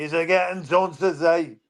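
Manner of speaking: put-on shout. Retelling shouting at rival fans from a car window: retelling a shout. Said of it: "and I shouted".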